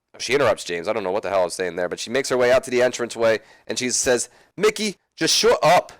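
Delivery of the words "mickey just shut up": clumsy, very high, drawn-out bad Irish accent. Retelling what a woman says as she interrupts James: bad Irish accent. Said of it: "That was probably one of my worst Irish accents I've ever done".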